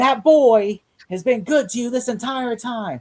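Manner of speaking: play-acted high yell. Describing a favorite scene where Alfred scolds Selena: imitating Alfred yelling. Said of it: "And then Alfred yells yells at her".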